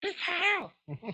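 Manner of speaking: put-on super high kid voice. Recalling asking the listener to watch a movie at age six, super high kid voice. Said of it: "I have a super high voice because I am like six years old".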